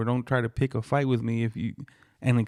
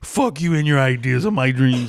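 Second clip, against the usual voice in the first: high-pitched, loud yelling; 8 semitones higher, 7 dB louder than usual. Acting out the other person's reply during an argument, retelling a yell. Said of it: "you're the one that started yelling".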